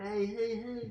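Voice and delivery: clumsy, very high-pitched put-on jock voice. Joking about a film actor playing jocks: terrible Adam Sandler impression. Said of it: "That's a terrible Adam Sandler impression".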